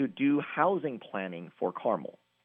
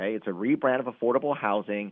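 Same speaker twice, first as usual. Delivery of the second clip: usual speaking voice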